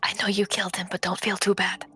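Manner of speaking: hushed whispering voice. Speaking in character into another character's ear: quiet whisper. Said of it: "whisper in her ear".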